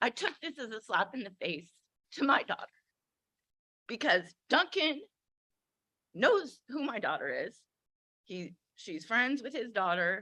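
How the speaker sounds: fighting hard not to cry. A mother speaking about an offense to her daughter, holding back tears. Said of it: "I'm trying not to cry".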